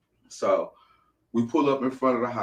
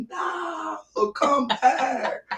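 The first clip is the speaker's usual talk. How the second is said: high, frantic screaming. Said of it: "screaming and hollering like".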